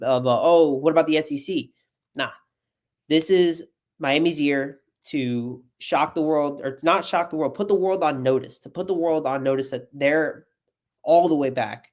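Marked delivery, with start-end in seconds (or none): 0.4-1.7 offhand, dismissive, brushing-off tone. Retelling how the national media talked about the team: imitating a dismissive voice. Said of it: "in a kind of dismissive voice".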